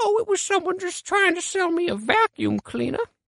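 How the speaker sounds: put-on high-pitched old-lady granny voice.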